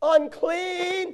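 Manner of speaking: high, loud hollered cry.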